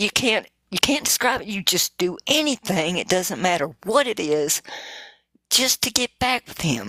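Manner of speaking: weeping, tearful, crying voice. Telling of an encounter with him, while crying. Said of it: "I'm sorry, I'm crying".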